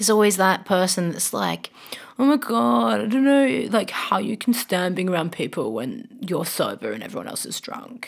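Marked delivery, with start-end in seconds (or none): 2.2-8.1 affected, put-on upper-class posh accent. Recalling that one person from their younger days, in a posh accent. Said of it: "where they speak so posh?".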